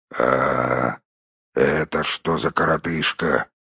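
grumpy, very low, slow mutter. The host speaking to the wizard and his companion, grumbling. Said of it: "проворчал хозяин".

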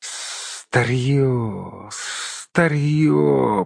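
hissing creature voice. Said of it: "прошипел он".

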